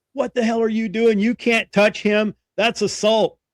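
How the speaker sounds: furious, angry screaming. Speaker recounting how a senior chief came over, retelling his screaming. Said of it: "just starts screaming".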